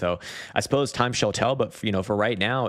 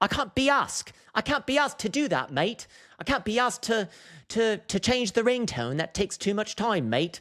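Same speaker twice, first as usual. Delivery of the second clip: put-on English accent, pushed very high; 13 semitones higher than usual. Imitating what English people say, in an English accent. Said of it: "why was that English accent not racist".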